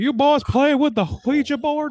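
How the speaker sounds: very high-pitched, loud, booming put-on voice. Joking about how a board game's name is said: Hank Hill voice. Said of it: "more of a Hank Hill thing to say".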